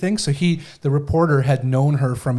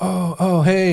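mock chuckling laughter in a higher pitch; 5 semitones higher than usual. Retelling how a man greets a reporter: imitating someone chuckling while talking. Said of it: "he's kinda laughing and chuckling".

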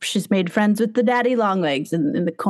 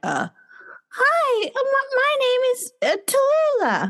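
put-on raised voice, much higher and slower. Trying out a sixth voice for the listeners, in the Tallulah character voice. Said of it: "I'm like pick up my voice".

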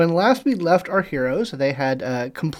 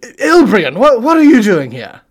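very loud, high, somewhat slurred yell; 6 semitones higher, 10 dB louder than usual. Describing a character who spots someone at the bar; somewhat slurred shout. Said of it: "somewhat slurred shout of".

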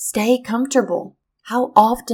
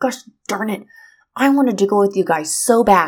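mock seething, livid angry outburst. Retelling the sister's reaction in the story: imitating someone livid. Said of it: "she is so livid".

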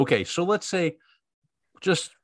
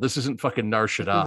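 usual speaking voice

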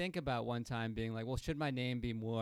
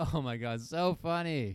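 very slow, loud, drawn-out put-on laughing, fake amusement; 3 semitones higher, 6 dB louder than usual. Asked to laugh as if the other just said something hilarious: fake laughing at a joke. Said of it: "do it one more time".

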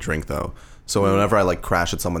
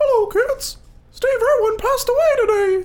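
very high-pitched cartoon voice; 4 dB louder than usual. Retelling how a seventh-grade teacher once spoke to the class; teacher's Mickey Mouse voice. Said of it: "she sounded like Mickey Mouse".

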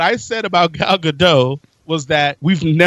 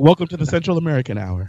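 calm, gentle, soothing voice. Joking about doing a show on NPR, introducing it in a soothing voice. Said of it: "with a soothing voice".

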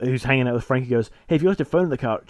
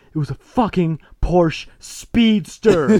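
mock loud, high, frantic freaked-out outburst; 5 semitones higher, 5 dB louder than usual. Retelling a man swearing about his lost car: imitating someone freaking out. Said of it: "he's freaking out a bit more".

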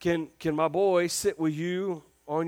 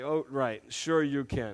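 fully mocking, sarcastic tone; 3 semitones lower than usual. Describing going into sarcastic mode with the guys, sarcastic tone. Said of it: "I'd immediately go into my sarcastic mode".

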